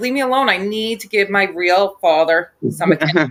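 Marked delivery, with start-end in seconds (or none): none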